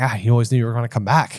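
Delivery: light put-on Irish accent. Discussing the books, the speaker quotes Harry with a bit of a Seamus-y accent. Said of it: "gave him a bit of a Seamus-y accent".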